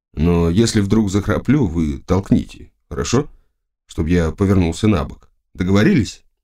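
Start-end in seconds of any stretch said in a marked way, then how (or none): none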